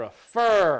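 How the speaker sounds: prefer with stress on second syllable fer. Comparing two stress patterns and picking one: stress on "fer" in prefer. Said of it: "I like prefer. Stress on the second syllable".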